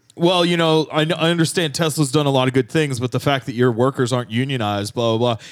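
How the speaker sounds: ordinary delivery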